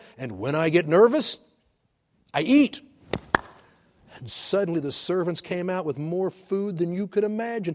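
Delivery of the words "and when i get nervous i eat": put-on strong, heavy Russian accent, laid on, raised. Retelling what a man said to children in English: imitating heavy Russian accent. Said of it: "with a heavy Russian accent".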